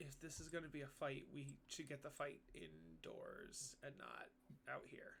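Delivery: very quiet, hushed whisper under the breath. A player's character speaks to the party, muttered under breath. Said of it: "under my breath say to the party".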